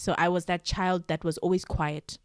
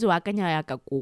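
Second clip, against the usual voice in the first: plain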